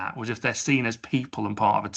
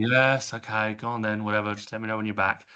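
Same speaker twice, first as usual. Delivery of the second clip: dismissive, grudging, offhand 'whatever' tone. Showing the wrong way to answer someone who is leaving, dismissive, grudging tone. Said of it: "the tone with which you say it".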